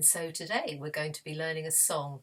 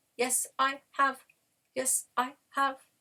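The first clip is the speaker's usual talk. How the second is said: very high, monotone, flat robot voice; 9 semitones higher, 6 dB louder than usual. In a voice warm-up, answering the call for a robot voice. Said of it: "Have you brought your robot voice?".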